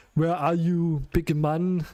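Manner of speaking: put-on heavy, laid-on Austrian action-hero accent. Retelling what was suddenly heard over in-game voice comms, in an Arnold impression. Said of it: "I made an Arnold impression there".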